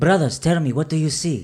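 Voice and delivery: very loud, high shout carrying across a distance. A character calls out to brothers who do not answer, shouting. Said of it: "when I hear him shouting at them".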